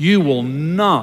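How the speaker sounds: hard, heavy emphasis on the word not. Repeating words someone once spoke to the speaker, stress on not. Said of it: "Just like that. Emphasizing the word not".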